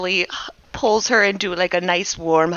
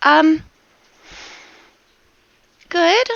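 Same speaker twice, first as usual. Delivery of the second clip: very high, squeaky little voice, sounding just woken; 10 semitones higher, 4 dB louder than usual. Voicing the plant Rose as she wakes herself up: Rose waking up. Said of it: "shakes her whole little plant body until her little petals are shuddering as she kinda wakes herself up".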